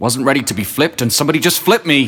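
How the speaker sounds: cartoonish indignant voice. A stand-up comedian performs his one and only impression: angry pancake impression. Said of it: "this is my impression of an angry pancake".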